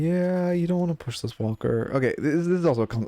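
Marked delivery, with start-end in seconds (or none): 0.5-1.9 very quiet, softly spoken. Commentating on gameplay, saying it really quietly. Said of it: "Sorry, I said that really quietly".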